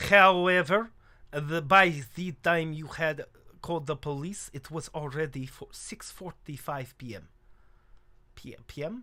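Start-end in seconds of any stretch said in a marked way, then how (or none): 0.0-7.3 bad, fake, put-on French accent. Speaker attempts a French accent, bad French accent. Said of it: "I don't know how to do a French accent".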